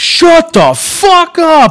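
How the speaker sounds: full-lung yell, very high and very slow. Retelling yelling at noisy kids: imitating a yell at the top of lungs. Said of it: "I've yelled".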